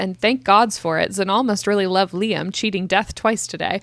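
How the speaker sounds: ordinary delivery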